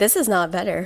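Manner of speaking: ordinary delivery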